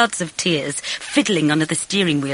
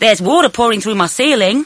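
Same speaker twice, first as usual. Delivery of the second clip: high, loud holler; 6 semitones higher, 6 dB louder than usual. [name], who lives below Bridget, calls to her from his window, shouting. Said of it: "he shouted".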